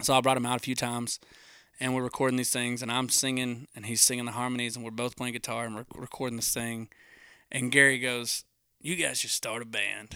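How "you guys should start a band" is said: heavy smoker's voice, two packs a day. Retelling what a producer said while recording songs: imitating Gary's smoker's voice. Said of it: "talk like that 'cause Gary smokes about two packs".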